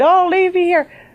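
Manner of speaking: very high screaming wail, crying out. Retelling screaming up at the sky on a country road: retelling screaming. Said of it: "screaming in the middle of the sky".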